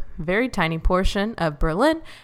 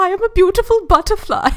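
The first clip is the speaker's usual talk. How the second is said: very high, loud put-on cartoon caterpillar accent; 12 semitones higher, 5 dB louder than usual. When asked to do the caterpillar voice, speaking in A Bug's Life caterpillar accent. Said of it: "can you do your caterpillar from A Bug's Life accent?".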